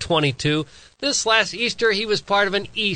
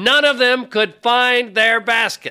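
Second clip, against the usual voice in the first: loud, higher-pitched yelling. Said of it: "Why are you yelling?".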